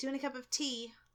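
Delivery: British-style lilt with rising pitch on "tea". Speaker demonstrates saying a phrase with British inflection. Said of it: "if I was doing British inflection".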